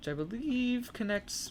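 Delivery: bad voice crack on the word "connects". Guiding viewers down into a cave, with a bad voice crack. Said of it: "that was a bad voice crack".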